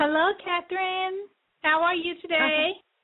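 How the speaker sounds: sunny, upbeat, cheerful, bright and high-pitched. Guest greets the host as class is about to start: cheerful. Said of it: "You sound so cheerful".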